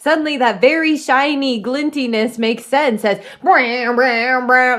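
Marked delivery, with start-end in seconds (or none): 3.4-4.8 "brow" rendered as a zapping electricity sound. Describing lightning that strikes a character at a cave: imitating electricity. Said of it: "That's what electricity sounds like".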